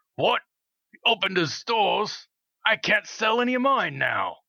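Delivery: rough, gruff dwarf voice, very high. Narrating a game, voicing a dwarf overheard near the merchant stalls: gruff dwarf voice. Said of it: "a dwarf that you overhear in a gruff voice".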